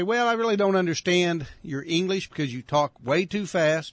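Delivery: ordinary delivery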